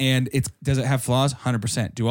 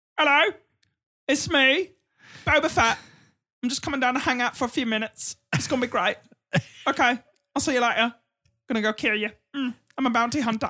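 very high, squeaky, made-up character voice; 11 semitones higher than usual. Host gives a name, then does how they wish Boba Fett sounded. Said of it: "I wish Boba Fett was like".

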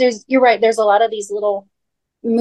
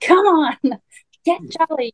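trying-hard eager cheer, pushy, bright, insistent, pitched up; 7 semitones higher than usual. Imitating the dad who is trying so hard: imitating George, trying hard. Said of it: "because he's trying so dang hard".

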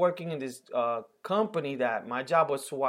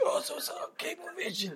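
raspy put-on voice, higher and quieter; 14 semitones higher, 8 dB quieter than usual. Imitating a TV actor in a commercial: Andres Garcia raspy voice. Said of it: "he has that raspy voice".

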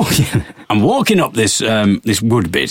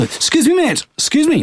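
higher-pitched, put-on posh English voice. Retelling own reply to a Scottish man: imitating own posh English voice. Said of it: "a lot posher".

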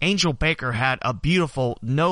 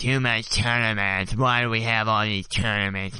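silly, goofy, ridiculous low put-on voice; 4 semitones lower than usual. Voicing an imagined objection to the tournaments in a ridiculous put-on voice. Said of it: "You might argue that in a voice that's not so ridiculous".

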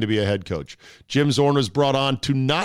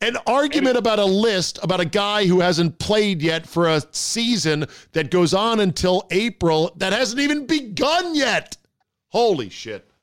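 loud yelling, shouting at a higher pitch; 8 semitones higher than usual. Ranting to another speaker about a pointless sports argument, yelling. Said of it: "I'm yelling, aren't I?".

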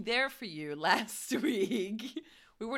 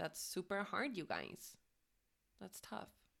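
very hushed, swooping put-on Valley Girl voice; 4 semitones lower, 12 dB quieter than usual. A host speaks to the listeners, in a valley girl voice. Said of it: "Valley Girl came out".

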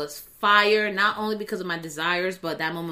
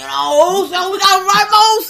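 put-on slurred speech, higher and louder; 13 semitones higher, 14 dB louder than usual. Imitating the Usos talking after joking about lean: imitating the Usos slurring. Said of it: "why are you slurring your speech?".

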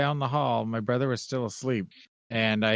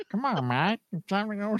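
goofy cartoonish voice; 9 semitones higher than usual. Telling Matt it's time to go, in a Meatwad voice. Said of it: "It sounds like Meatwad".

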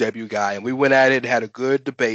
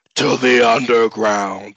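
put-on man voice. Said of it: "You like my man voice?".

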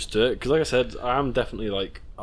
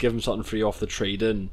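ordinary delivery

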